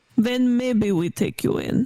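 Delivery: thick put-on Russian accent. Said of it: "this thick Russian accent guy".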